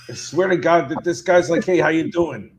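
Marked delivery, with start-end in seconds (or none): 1.6-2.3 put-on 1930s tough-guy mobster voice, Philadelphia accent. Describing a character who reminds them of a mobster: imitating a 1930s tough guy mobster. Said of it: "a tough guy mobster from the thirties".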